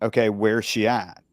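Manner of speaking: plain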